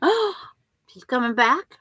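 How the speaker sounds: high, totally thrilled exclamation. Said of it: "I was just totally thrilled, going".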